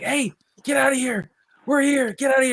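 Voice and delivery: mock very high yell, half-awake, out of a stupor. Telling a camping story, the speaker re-enacts yelling from inside the tent at what's outside. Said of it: "I'm just yelling".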